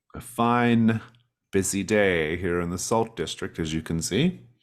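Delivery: dry sarcasm, "fine" stressed and stretched out. Voicing a character greeting a visitor: sarcastic tone. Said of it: "That's sarcasm, isn't it?".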